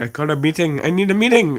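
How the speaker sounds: thick, stock put-on Indian accent. Calling an emergency meeting during a game, in the most classic Indian voice. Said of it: "The most classic Indian voice being like".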